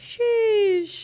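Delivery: amazed, impressed cry, pitched very high. Explaining when to say sheesh, demonstrating it with an impressed "sheesh". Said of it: "it's like when you're really impressed".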